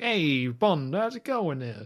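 light, slight put-on New York accent. Imitating a movie character's way of talking: New York accent impression. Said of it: "New Yorkie".

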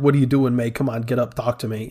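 put-on tearful voice. Quoting a character crying over May: imitating Peter Parker crying. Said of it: "crying over May is when he says".

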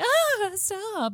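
play-acted, very high, giggly, playful, half-hearted tone. Imitating a character in a scene who protests without meaning it: giggly, half-hearted stop. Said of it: "a giggly kind of, not really no kind of stop".

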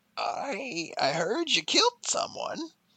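small, gravelly turtle voice. Narrating a scene where a turtle speaks after you say you failed, little gravelly turtle voice. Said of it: "you hear this little gravelly voice".

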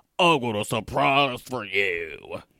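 deep voice. The killer catches the narrator trying to run away, deep voice. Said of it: "In a deep voice".

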